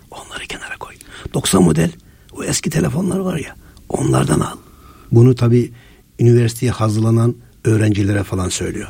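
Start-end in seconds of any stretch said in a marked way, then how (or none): 0.1-4.5 whispered, hushed, breathy voice turned right down. Acting out a man's advice to students preparing for university: imitating a lowered voice. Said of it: "sesini kısarak söylüyor".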